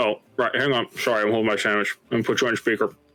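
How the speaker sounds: talking with a mouth full of food. Character asked to pass on a note, answering the caller: talking while eating a sandwich. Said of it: "it sounds like he's eating a sandwich or something".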